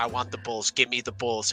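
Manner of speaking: put-on muttering under the breath. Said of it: "I was saying under my breath".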